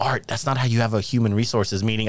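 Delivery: ordinary talk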